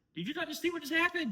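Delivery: mock, shrill, very high, loud, disbelieving scream. Retelling reacting to the girls watching the game: imitating own screaming. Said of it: "I'm sitting there screaming".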